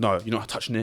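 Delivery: acted out, hard, adamant, properly aggressive tone. Retelling the guy refusing to refund the speaker's cousin, mock-aggressive refusal. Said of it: "But like proper like aggressive".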